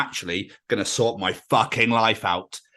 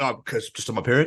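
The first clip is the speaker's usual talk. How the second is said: put-on, acted muttered murmur. Acting out how a remark just sounded when it was said, imitating a mutter. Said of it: "the way you murmured, murmured, the way you muttered it".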